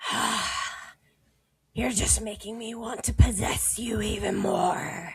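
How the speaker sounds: snarling, growling voice. Voicing a monster that growls back after being singed: growling. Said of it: "he growls at you in return".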